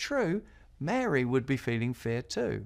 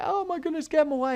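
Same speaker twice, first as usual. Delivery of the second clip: mock frightened, flustered, high, panicked outburst; 4 dB louder than usual. Retelling how a taxi driver reacted when dogs ran out: imitating someone panicking. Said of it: "the taxi driver flipped out".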